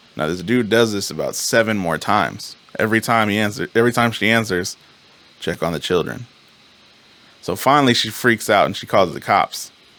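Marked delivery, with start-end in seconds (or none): 5.4-6.3 put-on whisper, lower. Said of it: "some dude who whispers".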